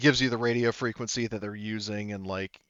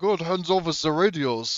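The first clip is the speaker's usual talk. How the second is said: put-on Danish accent, raised in volume and higher pitched; 7 semitones higher, 5 dB louder than usual. Voicing a code-cracking character who takes the radios: Brad Garrett with a Danish accent. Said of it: "Brad Garrett with a Danish accent".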